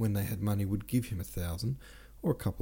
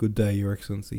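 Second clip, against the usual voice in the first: ordinary delivery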